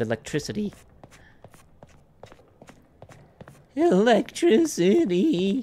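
voice breaking mid-word, high-pitched. Gamer walking into a dark room in the game, voice cracking. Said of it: "My voice is cracking".

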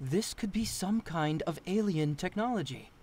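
ordinary talk

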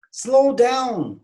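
high, cried-out shout. Demonstrating telling someone going fast to slow down, shouting. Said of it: "Bunu haykırarak söylüyorsunuz".

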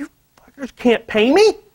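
sudden blowup of sheer anger, mad outburst. Recounting a meeting where they couldn't pay, the speaker is retelling an angry outburst. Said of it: "I was so mad".

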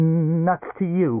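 stammering. Narrator reads Knatt's retort to a visitor, stammering. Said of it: "Knatt stammered".

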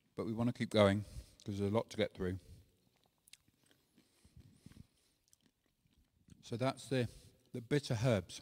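talking with mouth full, chewing. Leading a group through the bitter herbs while eating: talking with mouth full. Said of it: "Excuse me for eating while my mouth full".

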